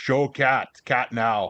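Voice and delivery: very slow, broken caveman speech. Teased by Broen for his phrasing, answering in a caveman voice. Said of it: "making me sound like a caveman".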